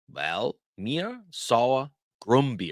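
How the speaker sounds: very slow, careful pronunciation. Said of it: "you might hear the person say this".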